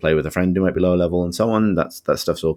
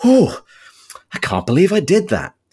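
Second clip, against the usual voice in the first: play-acted very high, breathless gasping exclamation; 10 semitones higher, 5 dB louder than usual. Quoting a voice line of the speaker's character, imitating it breathlessly. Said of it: "my character just sort of like said breathlessly".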